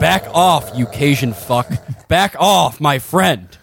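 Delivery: words growled out in a dog-like voice. Voicing a dog warning someone to back off: growling dog voice. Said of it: "starts growling at Carville".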